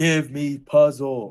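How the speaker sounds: very loud, booming, bellowing shout. Planning a scene, the speaker acts out a character shouting at others: shouting. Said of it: "he's gonna start like shouting at them".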